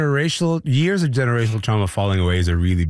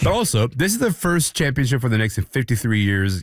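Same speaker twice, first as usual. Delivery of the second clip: normal talking voice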